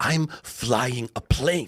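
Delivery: very slow, pointed, hostile and aggressive delivery. Retelling how the co-pilot snapped back: imitating an aggressive reply. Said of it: "he looks at me very aggressively".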